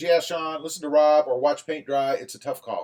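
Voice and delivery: ordinary talk, nothing marked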